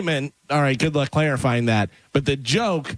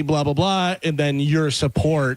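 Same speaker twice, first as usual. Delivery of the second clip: normal talking voice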